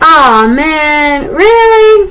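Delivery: high, loud, blurted-out exasperated disbelief.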